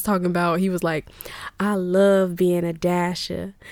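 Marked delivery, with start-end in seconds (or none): 1.6-3.5 slow, drawn-out put-on Southern drawl. Quoting a man from Georgia in a DoorDash commercial: Southern accent. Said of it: "with the, like, Southern accent".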